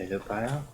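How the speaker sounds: soft, very sheepish voice.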